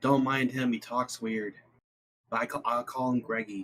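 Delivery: hushed, half-whispered delivery. Playing a character who walks over to Talos: half-whispering in character. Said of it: "just whispers".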